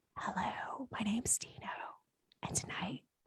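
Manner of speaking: mock ASMR whisper, very soft and voiceless. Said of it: "if you guys were quieter".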